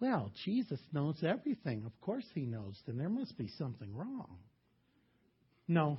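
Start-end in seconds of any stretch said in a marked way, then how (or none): 0.0-4.4 very soft, hushed, uptight fundamentalist church lady voice. Speaker voicing an imagined objection, uptight fundamentalist lady voice. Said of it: "That's the voice of the uptight fundamentalist lady".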